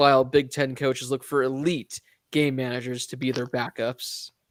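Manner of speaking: normal talking voice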